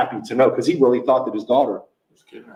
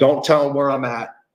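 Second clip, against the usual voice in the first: put-on fearful, urgent voice full of fear. Retelling what a woman in a video said, imitating her fearful voice. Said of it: "Like fear, you could hear it in her voice".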